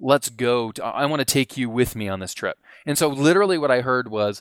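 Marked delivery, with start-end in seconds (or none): none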